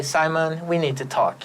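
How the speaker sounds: normal talking voice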